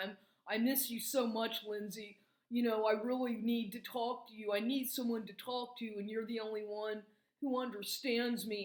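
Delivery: play-acted weepy, sob-laced, tearful, crying pleading tone. Retelling phone messages a man left the speaker, imitating someone crying. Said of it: "like crying".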